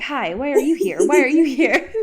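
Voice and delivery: loud, pushy, insistent, intrusive interviewer voice. Acting out leaning through cinema seats to question people: acting out a pushy interviewer. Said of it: "lean through all of the, the seats being like".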